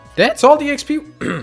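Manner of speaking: voice cracking. Player reacts to the xp earned after finishing an attack; voice cracking. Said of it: "that was a voice crack".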